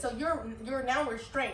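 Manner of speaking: ordinary talk, nothing marked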